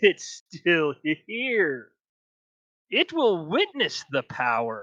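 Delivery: sinister cackling voice. Voicing a laughing voice in a player's head: evil laughing voice. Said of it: "it's just kind of an evil laughter".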